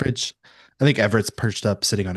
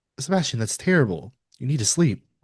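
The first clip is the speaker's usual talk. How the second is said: usual speaking voice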